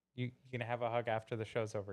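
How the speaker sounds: hushed, soft telling-off.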